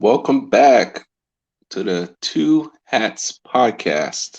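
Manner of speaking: very slow, deliberate. Podcast opening welcome line, said slowly on purpose. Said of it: "Had to say it slow".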